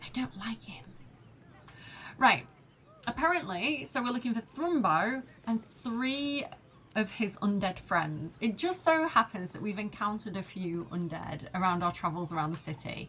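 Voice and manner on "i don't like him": imitated whisper, quieter. Retelling what a woman whispered to the others as she leaves, retelling a whisper. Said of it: "she's like whispering to them".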